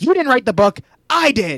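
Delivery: play-acted shouting, high-pitched. Recounting a scene at a table, the speaker acts out Daniel's reply, retelling a shout. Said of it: "and then shouts".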